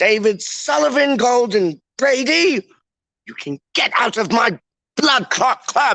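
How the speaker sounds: very high-pitched posh upper-class English accent. Playing around as a posh club owner; put-on posh English accent. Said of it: "saying like blood clot with the English accent".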